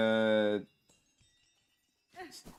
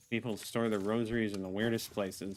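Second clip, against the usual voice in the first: usual speaking voice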